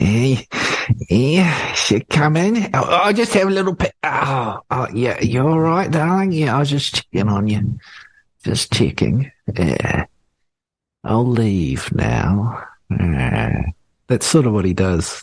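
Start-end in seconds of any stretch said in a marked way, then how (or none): 0.0-12.6 put-on creepy teacher voice. Imitating a science teacher by the girls' change sheds: impression of a creepy teacher. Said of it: "that's my impression of it".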